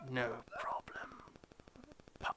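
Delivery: whispered, hushed, sibilant hiss through the teeth. Narrating, the speaker has a character look at you and hiss in the common tongue. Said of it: "in the common tongue hiss".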